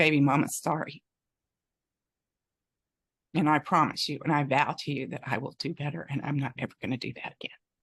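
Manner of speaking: tearful, welling-up voice close to tears. Retelling an apology to a child, welling up with tears. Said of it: "I'm starting to well up again now".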